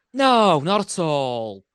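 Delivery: sarcastic delivery. Replying to another speaker who claims not to be looking at messages: sarcastic tone. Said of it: "you're sounding sarcastic".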